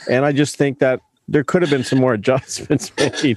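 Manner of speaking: laughing mid-sentence while speaking.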